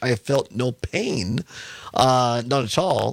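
slow, careful speech with a numb-sounding mouth. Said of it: "I'm having to speak very slowly".

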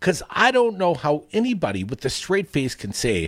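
plain

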